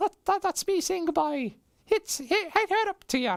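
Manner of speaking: very high fake Irish accent. Saying goodbye on behalf of an absent Irish co-host: offensive put-on Irish accent. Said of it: "a very offensive Irish accent".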